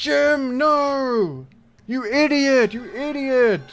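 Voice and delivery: imitated screaming. Retelling a crowd reacting to a wrong kick: imitating people screaming. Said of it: "everyone screamed at me like".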